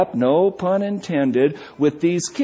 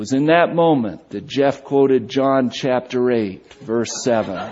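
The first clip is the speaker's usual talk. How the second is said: ordinary talk, nothing marked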